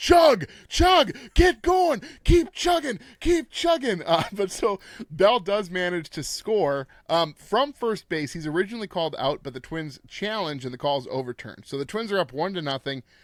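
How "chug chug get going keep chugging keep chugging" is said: frantic excited yelling, very high and loud. Recapping a baseball game, quoting a buddy at the screen: retelling a buddy's screaming. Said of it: "he just was screaming at the screen".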